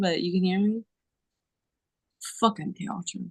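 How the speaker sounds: speaking in a whisper. Addressing someone who might be overhearing, whispering. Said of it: "'cause I know I'm whispering".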